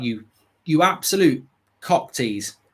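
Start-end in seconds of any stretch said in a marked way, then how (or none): none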